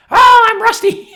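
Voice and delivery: shrill, very high, loud puppet chicken voice. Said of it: "a guy who does this with his voice".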